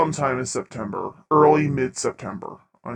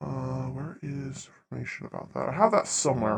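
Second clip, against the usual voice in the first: soft mutter under the breath; 9 dB quieter than usual. Searching for notes about a past season, muttering to oneself.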